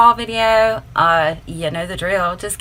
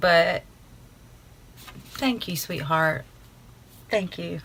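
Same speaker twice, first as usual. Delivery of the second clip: soft, choked-up and tearful; 9 dB quieter than usual. Speaker thanks the sender after reading a personal card: tearing up. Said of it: "I'm like tearing up".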